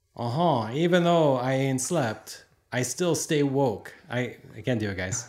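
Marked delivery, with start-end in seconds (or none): 0.7-3.9 failed, bad attempt at a French accent. Trying out a phrase for the group, in a bad French accent. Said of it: "It's supposed to be French".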